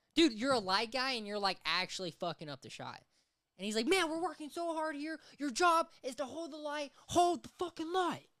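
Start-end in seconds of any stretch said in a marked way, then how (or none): 3.9-8.2 very high, shrill, ranting yelling.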